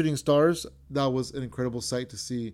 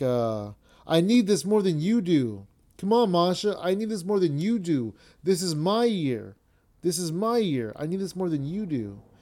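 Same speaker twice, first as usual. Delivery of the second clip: mock insistent, goading yell, high and urgent; 5 semitones higher than usual. Describing a match, acting out a man yelling at his female opponent: imitating someone yelling. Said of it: "and he's yelling at her".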